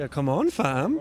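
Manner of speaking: upward lilt at the end on fam. Asking guests about their slang, demonstrating it: rising pitch at sentence end. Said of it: "you'll raise your pitch".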